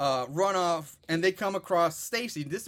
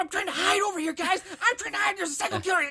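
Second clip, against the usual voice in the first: put-on whisper-yell, higher pitch; 13 semitones higher than usual. Retelling a movie scene, voicing Doug while he hides: Doug whisper-yelling. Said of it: "I can't whisper yelling".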